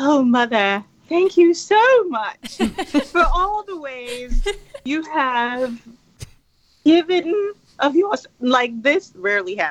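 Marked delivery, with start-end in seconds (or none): 0.0-8.3 theatrical, pitched-up, put-on British accent. Imagining children thanking their mother, mock British accent. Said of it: "like British accent, by the way".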